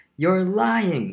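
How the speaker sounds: high-pitched crying out, exclaiming. Bruno responds to the narrator's claim, crying out. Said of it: "he cried".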